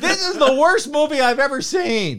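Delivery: mock, very high, shrill, all-out top-of-lungs shout. Retelling what she yelled while they watched a movie together, imitating her shouting. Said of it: "At the top of her lungs".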